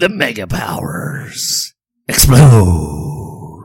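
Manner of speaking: very slow, dragged-out wrestling promo voice, words stretched. Naming a WrestleMania tagline when asked: bad Vince McMahon impression. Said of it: "I do a bad Vince McMahon impression".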